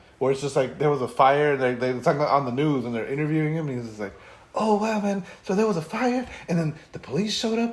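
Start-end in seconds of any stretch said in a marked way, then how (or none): 4.6-7.8 put-on mellow laid-back voice, higher. Retelling a news interview with the man who inspired Korg's voice: imitating a Korg-like voice. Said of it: "he's basically Korg".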